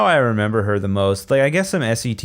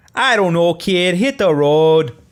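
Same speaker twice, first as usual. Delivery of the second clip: pitched-up, put-on Chicago accent attempt; 6 semitones higher, 4 dB louder than usual. Acting out a kid who sounds like he's from Chicago, Chicago accent attempt. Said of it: "What was that?".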